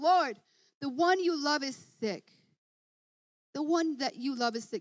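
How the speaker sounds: ordinary talk, nothing marked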